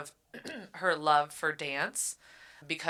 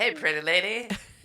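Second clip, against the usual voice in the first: laid-on-thick Jersey gangster street dealer voice; 3 semitones higher, 4 dB louder than usual. Playing a drug dealer approaching a woman, in a Jersey Boys voice. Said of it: "So more like Jersey Boys".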